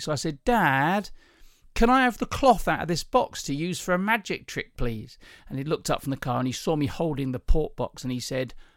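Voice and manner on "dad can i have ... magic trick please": acted wheedling, whiny little-kid voice. Recalling asking Dad for something as a child, imitating your old whine. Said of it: "I remember the tone of voice I used because I used to whine".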